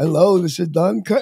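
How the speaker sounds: flat, emotionless delivery with no feeling. Recalling a Saturday night TV rock show's intro: flat Don Kirshner impression. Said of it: "he would sound like that".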